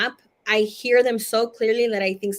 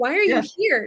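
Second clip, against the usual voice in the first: put-on scolding tone, higher pitch; 7 semitones higher than usual. Retelling scolding a dead uncle who appeared on the bed: imitating own childhood scolding. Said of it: "I'm like".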